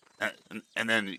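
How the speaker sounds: normal talking voice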